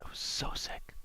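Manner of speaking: hushed whisper. Reacting to a stunning chess game with the co-commentator: whispering. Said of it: "Why are we whispering now?".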